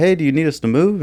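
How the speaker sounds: mild high-pitched call. Retelling calling out to a man up ahead, retelling a yell. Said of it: "I just yell out".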